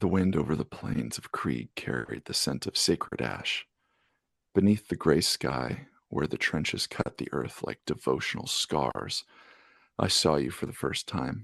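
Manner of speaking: seductive, low, sexy reading voice. Reading a story passage aloud to the other host, in a sexier voice. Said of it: "like a sexier voice".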